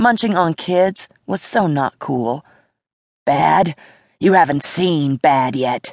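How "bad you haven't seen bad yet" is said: words ground out as a growl. Scolded for being a very bad boy, he answers, growling. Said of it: "he growled".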